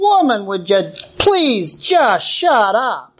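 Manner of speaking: mild, fed-up, exasperated outburst. Retelling a husband crying out at his wife during a traffic stop, retelling a loud outcry. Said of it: "cry out in an even louder voice".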